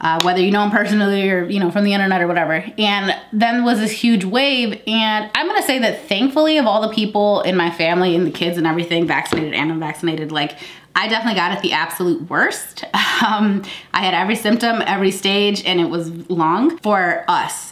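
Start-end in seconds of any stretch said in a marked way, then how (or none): 15.6-17.7 long stressed, drawn out slow and falling. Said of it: "It was, like, long for us".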